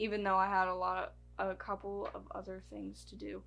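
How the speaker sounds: ordinary talk, nothing marked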